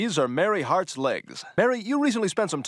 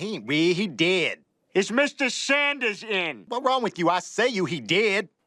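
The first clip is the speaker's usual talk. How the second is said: put-on Kentucky accent, higher pitch; 4 semitones higher than usual. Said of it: "how people stereotypically speak in Kentucky".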